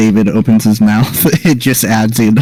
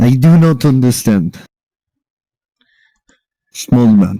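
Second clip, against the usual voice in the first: put-on Russian accent on broken English. Told to speak properly, answering in a put-on Russian accent. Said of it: "I made it Russian a while back".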